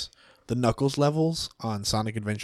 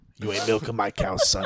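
crusty put-on old-timer voice and accent; 4 semitones lower than usual. Suggesting a character voice to a fellow player, in a crusty old guy accent. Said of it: "Do like a crusty old guy accent".

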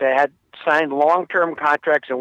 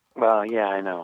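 very low, flat, level, unenthused tone; 7 semitones lower, 4 dB quieter than usual. Reminded the Mets got a player back, answering unexcited. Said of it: "You don't sound excited".

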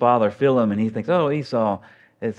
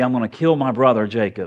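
mock-angry, acted out angry tone. Retelling a story, speaker quotes a brother who lost everything, retelling an angry threat. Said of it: "He's so angry".

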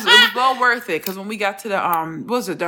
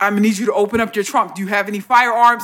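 put-on, mock commanding, authoritative delivery; 3 dB louder than usual. Retelling entering a federal building, quoting the guy letting them in, imitating an authoritative voice. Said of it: "he just starts saying shit in a real authoritative voice".

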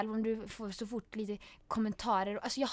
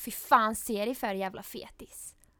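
ordinary talk, nothing marked

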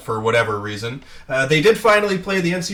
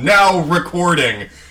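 loud, higher-pitched yelling robot voice; 2 semitones higher, 5 dB louder than usual. Podcaster recalling the recording bot they used on Discord, loud CraigBot robot voice. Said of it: "this insanely loud robot voice would yell".

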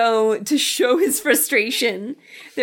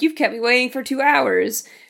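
normal talking voice

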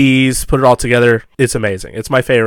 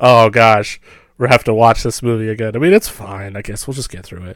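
put-on defeated sound. Imitating the other speaker agreeing to rewatch a movie: imitating a defeated sound. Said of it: "a defeated sound, like".

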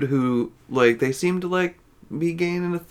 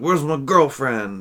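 put-on irate, angry, demanding tone. Retelling a movie scene where the boyfriend comes back: imitating an angry boyfriend. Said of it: "and he's all angry, he's like".

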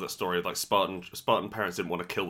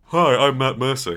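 booming, slow, bad delivery; 6 semitones higher, 12 dB louder than usual. Joking about voice actors owning yachts, doing a bad Matt Mercer impression. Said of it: "he'd say".

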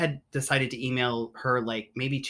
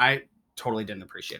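normal talking voice

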